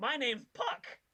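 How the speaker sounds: loud, very high, ringing talking-sword voice. A voice speaks loudly from a sword, introducing itself: loud Puck sword voice. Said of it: "you hear a voice loudly emanate from the sword".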